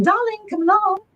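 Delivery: put-on high-pitched English accent, calling out. Retelling a voice heard calling out late at night, in an english accent. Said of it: "and it was in an English accent".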